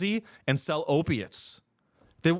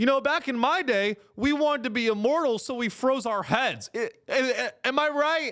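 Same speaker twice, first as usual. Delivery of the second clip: high-pitched, mocking stand-up comedian punchline delivery; 8 semitones higher than usual. Mocking a billionaire who jokes about freezing heads: Peter Thiel doing stand-up. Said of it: "Peter Thiel's, like, doing stand-up".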